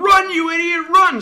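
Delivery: very loud, very high, drawn-out crowd yell. Retelling what everyone at a baseball game yells after a hit, retelling a crowd yelling. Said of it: "everybody starts yelling".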